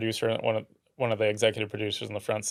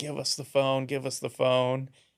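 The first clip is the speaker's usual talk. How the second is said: play-acted, pressing, demanding screaming cry, said twice; 4 semitones higher than usual. Retelling gunmen stopping the car: imitating someone screaming. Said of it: "we're screaming".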